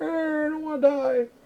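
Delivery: mock, very high, frightened whimpering whine. Retelling how scared players complained, imitating scared players whining. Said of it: "That's what they sound like to me in my brain".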